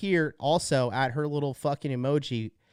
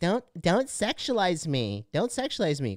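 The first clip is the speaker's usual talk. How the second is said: sneering, derisive, mocking woman's voice; 3 semitones higher than usual. Retelling what a woman at the gym says: mocking imitation of a woman. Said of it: "here she is like".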